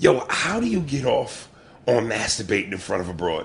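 ordinary talk

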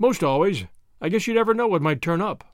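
plain reading voice

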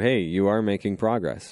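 ordinary delivery

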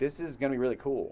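ordinary delivery

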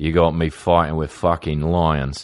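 very bad, fake New Zealand accent. Retelling Russell Crowe's reply to being told not to play soccer, bad Russell Crowe New Zealand accent. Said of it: "Worst New Zealand accent ever".

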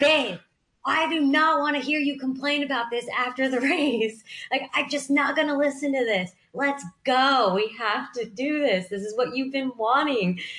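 mock tough-love yelling. Recounting her husband pacing her during a race, retelling her husband's yelling. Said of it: "he was literally yelling at me".

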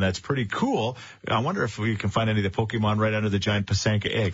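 ordinary talk

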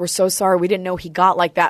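normal talking voice

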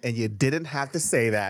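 ordinary talk

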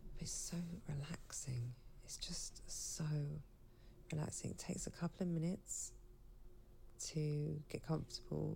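sleepy and worn out. Lying on a Shakti mat while waking up, the speaker talks: groggy and tired. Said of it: "So I sound a bit groggy and tired because I am".

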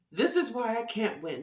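plain

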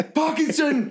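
shrill, very high angry teacher-like outburst. Retelling a french teacher's outburst at a pupil: imitating an angry teacher. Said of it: "he was so angry".

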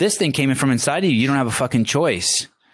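fierce, insistent voice. Speaking straight to the other speaker, yelling at them. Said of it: "I'm yelling at you".

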